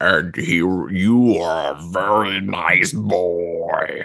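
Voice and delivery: low, deep voice. Describing what the thing says to you, in its deep voice. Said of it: "it kind of talks in kind of a deep voice".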